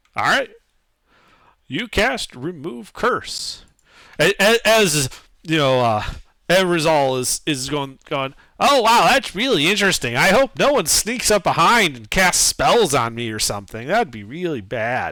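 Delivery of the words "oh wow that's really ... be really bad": heavy, dripping sarcasm in a sing-song character voice. Voicing a character who resists a spell: sarcastic character voice. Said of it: "using sarcasm to resist a Gaia".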